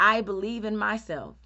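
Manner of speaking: usual speaking voice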